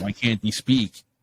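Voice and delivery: normal talking voice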